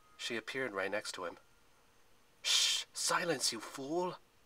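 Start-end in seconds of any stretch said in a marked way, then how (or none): 2.4-4.2 slow, high stage whisper. Narrator reading Zoe's line to Percy: whispered. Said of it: "she whispered".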